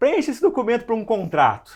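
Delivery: bossy, high, loud, demanding voice.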